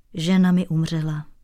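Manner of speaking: ordinary delivery, nothing marked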